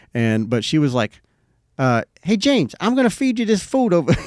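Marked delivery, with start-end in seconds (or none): 2.2-4.1 tiny, squeaky, very high gangster voice. Imitating how she first spoke to the speaker, in a squeaky little mobster voice. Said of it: "like like a little mobster".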